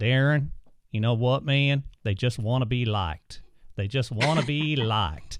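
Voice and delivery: put-on easygoing American Southern accent. Quoting another man's answer to his question, in a southern accent. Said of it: "And in a southern accent".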